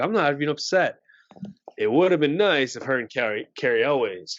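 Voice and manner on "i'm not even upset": plain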